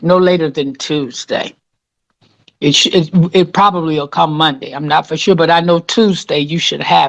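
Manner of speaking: ordinary delivery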